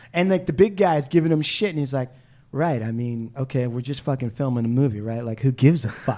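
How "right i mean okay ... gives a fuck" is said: put-on dry, unbothered, low deadpan. Retelling what Little Bill answered about the next shot: imitating a deadpan line. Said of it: "he says it in this deadpan way".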